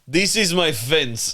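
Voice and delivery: heavy, thick, put-on Russian accent, slow. Joking after another speaker mentions a Russian accent: thick Russian accent. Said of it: "Olaf in the back there".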